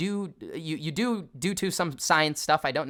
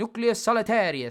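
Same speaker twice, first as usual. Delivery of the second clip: high, fancy, playful Italian chef accent; 6 semitones higher, 4 dB louder than usual. Explaining a term, saying its name in a fun Italian chef accent. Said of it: "it's a fancy chef".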